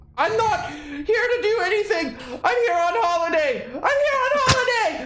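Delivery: high-pitched, loud, panicked screaming.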